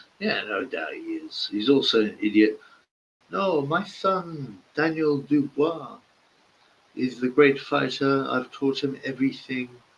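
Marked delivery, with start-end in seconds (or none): 3.3-9.7 put-on camp voice, higher. Mocking a boxing trainer with an impression: Don Charles impression. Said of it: "he talks a bit like Eubank".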